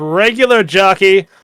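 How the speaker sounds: shouted at the top of the voice. Player acting out their character throwing hands in the air, yelling. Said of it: "DeWalt throws his hands in the air and yells".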